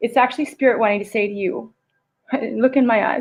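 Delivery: choked-up voice, catching with emotion. Speaker passing on to listeners what spirit wants to say, choked up. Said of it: "I'm getting choked up".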